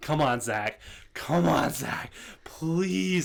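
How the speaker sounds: acted slow, drawn-out pleading, begging tone. Retelling watching a match on TV, imitating own begging. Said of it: "I was begging the T V to give me Zack".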